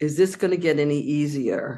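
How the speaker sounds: plain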